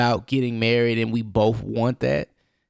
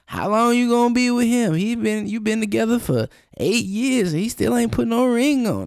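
put-on very high-pitched elderly old person voice; 12 semitones higher than usual. Acting out what a couple together eight years keeps hearing, old person voice. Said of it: "That voice you did, who was that?".

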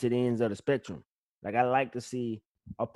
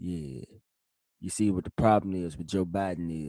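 put-on deep voice, much lower than normal; 5 semitones lower than usual. Talking on the show in a put-on deep 'midnight storm' voice. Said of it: "This is my midnight storm voice".

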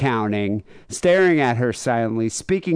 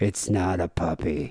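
put-on flat, low, quiet, slow emotionless voice; 7 semitones lower, 6 dB quieter than usual. Retelling how a man answered her, imitating an emotionless low voice. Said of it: "Just this like emotionless, fucking psychotic voice".

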